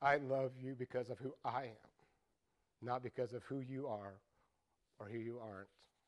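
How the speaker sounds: gentle whisper. Retelling what he says to a struggling person: imitating a gentle whisper. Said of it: "And he whispers".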